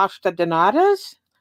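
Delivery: poor, unconvincing put-on Portuguese accent. Speaker names a pastry they make, in a bad portuguese accent. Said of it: "my Portuguese accent sucks".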